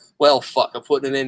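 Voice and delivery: ordinary talk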